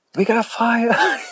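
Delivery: mock very high shrill scream, alarmed. Retelling a fireman screaming a warning at the store front: imitating someone screaming. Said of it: "he's screaming. He's like".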